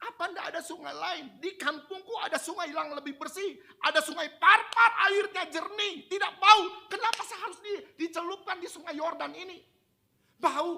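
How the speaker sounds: loud, furious, indignant angry ranting.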